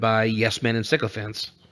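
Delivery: normal talking voice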